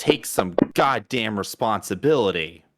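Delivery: sobbing, angry shout through tears. In a role-play scene, the character shouts blame at another, shouting while sobbing. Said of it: "I'm like sobbing through it at this point".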